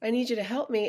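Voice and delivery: tearful pleading voice. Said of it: "I was just crying".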